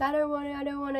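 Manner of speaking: put-on high, frightened child voice, pleading, repeated. Retelling being held down by doctors: imitating her scared younger self. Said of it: "I remember being really scared".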